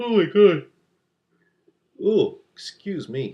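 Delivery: very high, loud words drawn out through yawn. Apologizing mid-sentence while explaining art choices, yawning while talking. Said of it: "me yawning while I'm, uh, while I'm talking".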